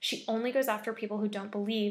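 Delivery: plain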